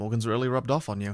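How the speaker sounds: plain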